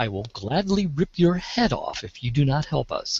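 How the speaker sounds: softest, sweetest, most sincere salesman voice. Whispering into a receptionist's ear from behind, sweet sincere salesman voice. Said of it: "my sweetest, sincerest salesman voice".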